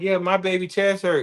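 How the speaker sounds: protective mother voice, speaking up. Retelling what a player's mom says from the sideline: imitating a mother on the sideline. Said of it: "his mom be on the sideline".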